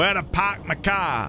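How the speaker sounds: poor put-on Boston accent. Asked for a Boston accent, the speaker attempts one: bad Boston accent. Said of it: "Your Boston accent?".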